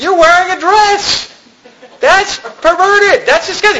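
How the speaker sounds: high, slow, scandalized gasp of disgusted disbelief.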